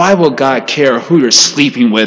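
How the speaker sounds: put-on tone of open disgust. Quoting an objection by Richard Dawkins: imitating Richard Dawkins with disgust. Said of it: "he says with such disgust".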